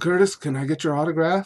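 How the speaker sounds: mock nervous timid voice. Retelling a kid approaching in a dark parking lot: imitating a nervous kid. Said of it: "really nervous about it".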